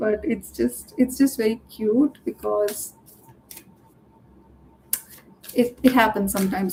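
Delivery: speech broken up by laughter. Talking to a listener about love, apologizing for laughing; laughing while talking. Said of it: "I'm sorry, I'm laughing".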